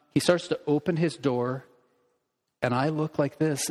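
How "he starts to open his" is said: plain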